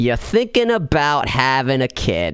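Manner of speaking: Rhode Island accent, laid on thick. Opening a podcast topic, saying the line again: Rhode Island accent. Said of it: "let's do this in my Rhode Island accent".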